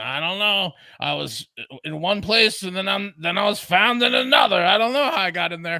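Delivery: put-on raspy party-girl voice. Recounting a news story about a missing woman, imitating Marlene's raspy voice. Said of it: "with her raspy voice, she goes".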